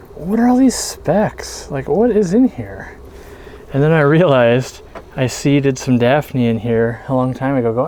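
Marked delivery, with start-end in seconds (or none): 0.2-3.0 high, slow, puzzled wondering. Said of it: "I saw".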